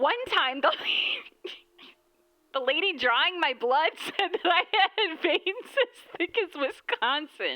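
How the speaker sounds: high giggling, laughing through the words. Reading out a message and struggling to finish it, laughing while talking. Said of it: "I can't even say this without".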